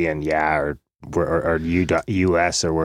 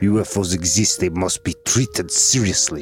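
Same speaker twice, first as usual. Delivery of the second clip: put-on Russian accent on English speech; 2 semitones higher than usual. Asked to say a Gorbachev quote in Russian, a co-host delivers it with Gorbachev's Russian accent. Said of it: "That's good, man. You got a good one".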